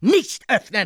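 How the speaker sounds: ordinary delivery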